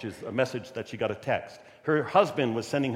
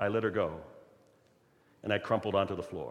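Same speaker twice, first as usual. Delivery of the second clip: usual speaking voice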